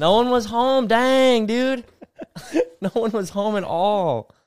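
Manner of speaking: high, slow, drawn-out mock drunk voice.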